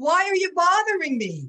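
put-on forceful, loud, emphatic Brooklyn New York accent. Retelling what a rabbi from Brooklyn said to your husband, in Rabbi Hach's very emphatic Brooklyn accent. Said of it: "said very emphatically with that Brooklyn accent".

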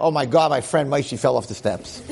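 usual speaking voice

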